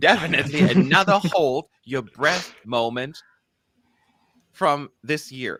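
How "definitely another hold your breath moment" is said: raised voice, broken up by giggles. Reading a stage description aloud, giggling while reading. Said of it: "This description just made me just giggle throughout".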